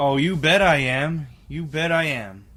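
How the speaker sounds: booming, very loud, eager and enthusiastic voice. Answering whether you will smoke after the show, like a narc. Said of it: "with the passion and with the integrity of a narc".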